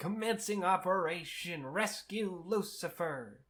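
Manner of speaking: eager call-out. Retelling a scene where the character announces the mission: imitating a character shouting. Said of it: "he's shouting".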